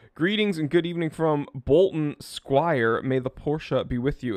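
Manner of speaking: usual speaking voice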